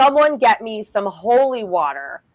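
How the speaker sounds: mock, deliberate, called-out delivery. Retelling a frantic moment during a possession, retelling own yell. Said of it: "and I yelled".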